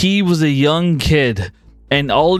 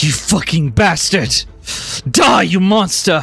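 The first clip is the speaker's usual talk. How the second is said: muttered under her breath. Voicing a fighter who sees an ally fall: cursing under her breath. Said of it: "she just curses under her breath".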